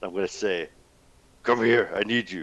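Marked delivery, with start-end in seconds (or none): 1.4-2.4 loud, booming dragon voice. Game player sends a message in Draconic into someone's head, mimicking a dragon's voice. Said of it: "I'm going to do my best to mimic a dragon's voice".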